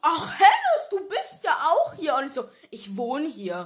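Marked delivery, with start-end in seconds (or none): 0.0-2.2 put-on full-mouth voice, much louder. Retelling meeting Pina on the bus, imitating her talking with a stuffed mouth. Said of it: "mit so vollgestopftem Mund".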